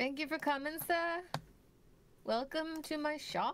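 put-on British-sounding accent. Playing a shopkeeper, the speaker greets a customer in a British-sounding accent. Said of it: "are you British? Is that a British accent?".

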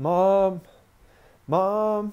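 loud yelling voice. Bursting through the front door for help, retelling yelling for mom. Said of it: "I'm yelling".

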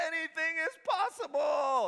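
very high, screamed exclamation. Retelling a post-game interview, imitating Kevin Garnett screaming. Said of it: "he just screams".

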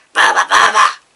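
put-on loud, low growling creature voice, Andalusian accent. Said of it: "Tengo que poner la postura del Bulbasaur".

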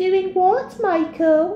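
put-on high girly voice. Grabbed by the neck, the boy sniggers back at Michael: high, girlish voice. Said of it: "he said in a high, girlish voice".

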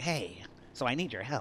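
slow, drawn-out delivery. Showing how a game character talks: imitating Lester's voice. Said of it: "That's what he talks like".

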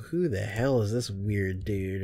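plain

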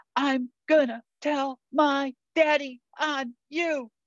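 put-on small frightened five-year-old girl voice, high and slow. Retelling a dream, voicing a woman speaking as her five-year-old self: imitating a scared five-year-old. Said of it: "in that little scared 5-year-old voice".

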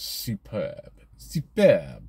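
silly put-on French accent. Reading out car sales figures, the speaker says the brand in a silly french accent. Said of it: "Must stop putting on my silly French accent".

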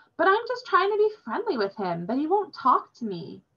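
very high, sing-song, swooping protesting tone. Told sternly to leave someone alone, the speaker answers back; protesting. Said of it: "protested Robin".

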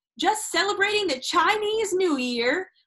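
shouted with a cackle. Narrator reads Otis Amber's line to the petrified hostess, shouted with a cackle. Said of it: "adding one of his hee-hee-hee cackles".

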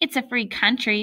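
plain reading voice

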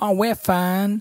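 high, slow southern Texan drawl.

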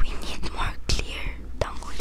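voiceless, quiet whispering.

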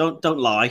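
put-on matter-of-fact, deadpan delivery. Retelling a scene from a movie: imitating a matter-of-fact delivery. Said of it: "very matter-of-factly".

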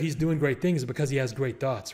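ordinary talk, nothing marked

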